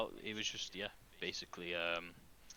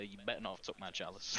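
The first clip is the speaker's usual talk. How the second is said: ordinary delivery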